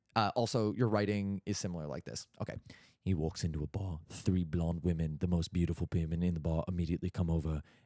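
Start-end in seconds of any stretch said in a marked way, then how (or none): 3.1-7.6 exaggerated put-on bass voice, very deep. Impersonating Sam Hine, thought to have a really deep voice: Sam Hine impression, very deep. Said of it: "This is my Sam Hine impression. ... I thought you had a really deep voice".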